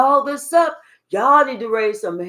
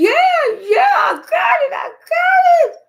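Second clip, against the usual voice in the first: mock very high, drawn-out, gloating cry of glee; 4 dB louder than usual. Retelling how the witch reacted, imitating an excited witch. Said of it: "She was so excited".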